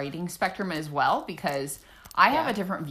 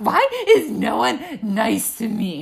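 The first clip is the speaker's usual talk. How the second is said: mock annoyed voice, higher and louder; 4 semitones higher, 6 dB louder than usual. Retelling a friend's reaction to engagement news: imitating Haley sounding annoyed. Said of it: "she was annoyed".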